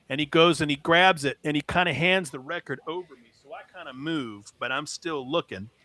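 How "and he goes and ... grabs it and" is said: usual speaking voice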